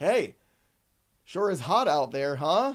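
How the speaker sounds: slow, unhurried, casual small talk. Imitating the guy at the carving station who makes small talk: carving station guy voice. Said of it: "this guy's like".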